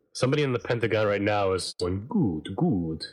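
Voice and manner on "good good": hammy, low, put-on vampire accent. Acting out somebody in the Pentagon reacting to the talk right now, in a vampire voice. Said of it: "That's your vampire voice".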